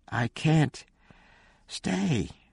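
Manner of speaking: feeble, weak voice. Narrator reads a woman's reply to Shauna, spoken weakly. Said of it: "she said weakly".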